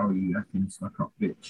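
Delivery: imitated whisper. Retelling a film scene where a guy whispers an insult: imitating someone whispering. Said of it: "he whispered to her".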